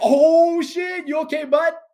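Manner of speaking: play-acted very high, loud, happy excited voice. Retelling checking on someone, acting out an excited, higher-toned reaction. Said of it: "an excited voice".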